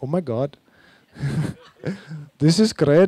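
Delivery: put-on Indian accent. Reading out a woman's written reply, in an Indian accent. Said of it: "starting an Indian accent now".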